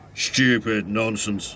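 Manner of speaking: grumbled complaint. An unfriendly red bus, watching happy passengers, grumbling. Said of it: "he grumbled".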